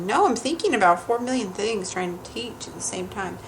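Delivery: ordinary talk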